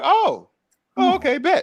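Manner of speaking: very high, very slow, stretched-out pleasant surprise. Acting out a villain reacting to a challenge: pleasantly surprised Darkseid voice. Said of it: "just like a pleasant surprise".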